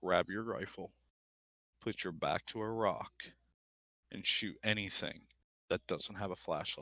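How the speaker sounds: very calm, soft, even tone. Retelling the dad's words over the radio, imitating a very calm voice. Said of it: "the calmest voice as possible says".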